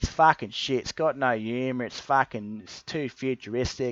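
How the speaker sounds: put-on thick, full-on broad Australian accent. Retelling a friend's verdict on a TV show; full-on Australian accent. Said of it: "This is like his full-on Australian accent".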